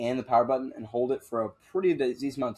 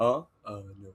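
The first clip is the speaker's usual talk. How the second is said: put-on drowsy dazed voice, lower; 3 semitones lower than usual. Acting out a dad asked a question: imitating a half-asleep dad. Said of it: "he's, like, half asleep".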